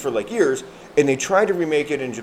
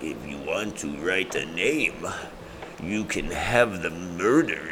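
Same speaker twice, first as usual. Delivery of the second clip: very low, hushed, soft demon voice; 7 semitones lower, 6 dB quieter than usual. Show your listener how the eight-foot demon that follows a kid talks, in a Willem Dafoe demon voice. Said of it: "He talks like that".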